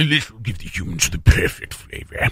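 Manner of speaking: low alien voice, drier. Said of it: "And not enough saliva".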